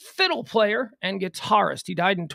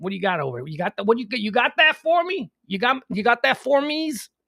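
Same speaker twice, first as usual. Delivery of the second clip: fast, cartoonish Chicago accent, laid on thick; 3 semitones higher than usual. Speaker demonstrates the way they say things, in a cartoonish chicago accent. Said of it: "cartoonish version of the Chicago accent".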